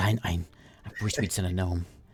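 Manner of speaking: quiet muttering under his breath. Voicing a character who mutters a complaint: muttering under his breath. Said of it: "under his breath, he says".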